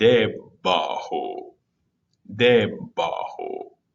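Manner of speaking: voice dropped very low and deep. Showing a class how to say the word underneath: very low voice. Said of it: "You make your voice real low".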